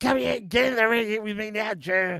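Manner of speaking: put-on furious screech, high-pitched and angry. Retelling how Seth got extremely angry at Joe: imitating Seth's angry screech. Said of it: "screechy damn voice".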